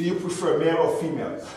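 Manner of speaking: ordinary delivery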